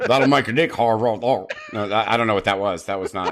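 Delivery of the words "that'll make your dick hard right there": loud, put-on South Carolina accent. Asked to redo a line in more of a South Carolina accent. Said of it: "more of a South Carolina accent?".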